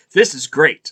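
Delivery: ordinary talk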